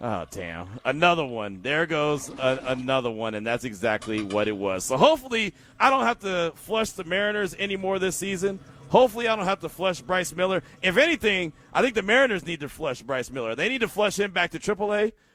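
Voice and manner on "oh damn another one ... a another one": normal talking voice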